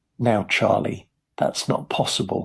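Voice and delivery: ordinary talk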